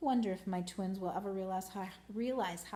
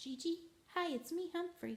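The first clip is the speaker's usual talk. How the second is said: soft, quiet, very high, squeaky little voice; 9 semitones higher, 4 dB quieter than usual. The narrator, unsure if gigi is awake, greets her: quiet squeak. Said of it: "so I quietly squeaked".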